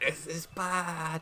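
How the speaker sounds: mortified, panicked, slow, high, drawn-out dread.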